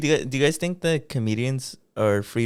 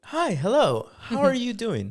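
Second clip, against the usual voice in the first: very high, polite customer-service voice; 10 semitones higher than usual. Demonstrating the customer service voice people joke about, in a customer service voice. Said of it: "your customer service voice".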